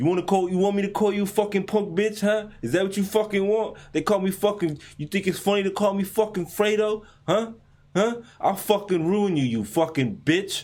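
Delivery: put-on tough Italian gangster accent. Recounting a CNN video, the speaker imitates the man's tough Italian gangster accent. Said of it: "the more gangster he got in his Italian accent".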